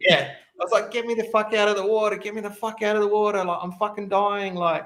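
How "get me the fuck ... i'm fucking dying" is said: put-on screaming, pushed high but kept contained. Retelling being pulled out of the water, imitating own screaming at him. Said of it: "I'm screaming at him".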